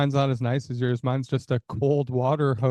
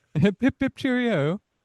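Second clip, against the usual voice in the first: fake British accent, pitched high; 9 semitones higher than usual. Told to try an accent after saying they can't, put-on British accent. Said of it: "You try".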